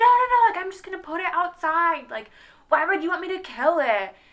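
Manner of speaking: loud, high-pitched yelling. Retelling how a man screamed back at the speaker, imitating someone screaming. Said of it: "And he's like screaming back at me".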